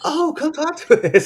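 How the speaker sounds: high, sweet voice.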